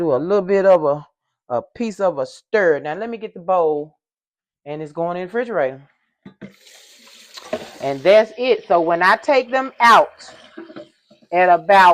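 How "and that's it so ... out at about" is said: raised, carrying yell, too close to the mic. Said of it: "I'm yelling".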